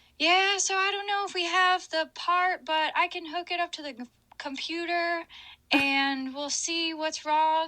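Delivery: put-on very high, thick Oklahoma accent laid on heavily. Retelling what a repair shop guy said on the phone: thickest Oklahoma accent. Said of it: "the thickest Oklahoma accent".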